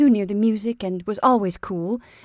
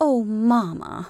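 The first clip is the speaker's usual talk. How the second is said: with distaste. Mary answers her mother's remark about a man, with distaste. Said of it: "Mary said with distaste".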